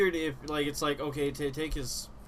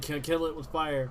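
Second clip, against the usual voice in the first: ordinary talk, nothing marked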